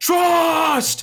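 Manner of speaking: high, loud screaming. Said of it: "Rezik would just scream out".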